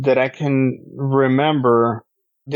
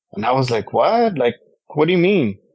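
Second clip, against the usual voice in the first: normal talking voice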